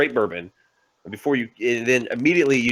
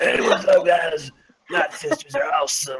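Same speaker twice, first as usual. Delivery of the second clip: raspy, hoarse, scraped-raw sandpaper-rough throat; 4 semitones higher than usual. Retelling a stream done while ill: imitating own sandpaper-rough sick voice. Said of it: "sounded like I had, like, sandpaper just balled up".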